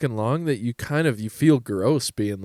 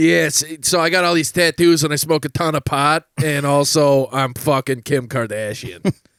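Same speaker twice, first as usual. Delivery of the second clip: mocking put-on horrifying voice, louder; 2 semitones higher, 5 dB louder than usual. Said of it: "He's got a horrifying voice".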